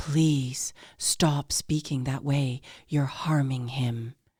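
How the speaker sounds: hushed, controlled voice. Retelling what was said to a mother on the street: hushed, controlled voice. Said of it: "in a very hushed, controlled voice".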